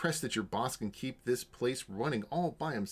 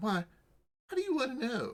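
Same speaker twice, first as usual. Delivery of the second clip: put-on odd, very high-pitched weird boy voice; 13 semitones higher than usual. Voicing a boy being questioned about a missing family, weird boy character voice. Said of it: "that was a weird voice for him".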